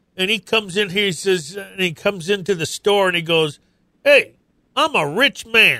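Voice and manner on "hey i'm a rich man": put-on cowboy drawl, slow and unhurried. Telling about a big cowboy who came into the store, imitating a cowboy's voice. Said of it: "he talked like".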